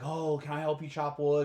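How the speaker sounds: ordinary talk, nothing marked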